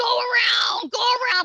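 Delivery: shrill, very high, loud, drawn-out scream. Retelling a race's last lap, imitating Mister Cook screaming. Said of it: "Mister Cook is literally screaming at me".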